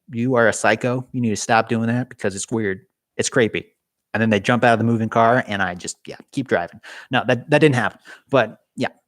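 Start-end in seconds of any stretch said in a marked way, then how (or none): none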